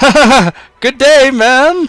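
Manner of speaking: very high, very loud, drawn-out laughing conductor voice. Voicing the train conductor who leans over and peers at a player. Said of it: "and he's like".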